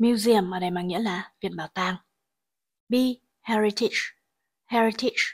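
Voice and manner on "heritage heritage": heritage with stress on the first syllable. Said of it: "trọng âm rơi vào âm tiết thứ nhất".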